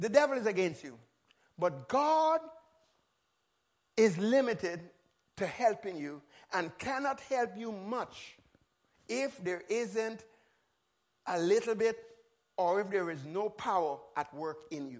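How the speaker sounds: slow, measured, deliberate, word-by-word delivery. Speaker teaching about prayer, stressing a key statement to listeners: said slowly. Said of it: "I got to say it slowly".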